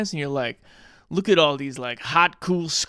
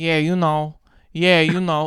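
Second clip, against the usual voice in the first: put-on Brooklyn tough-guy accent with a stuck, looping verbal tic; 3 dB louder than usual. Imitating an actor's verbal tic: imitating an actor's Pacino-Brando tic. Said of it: "he's just doing Pacino and Brando".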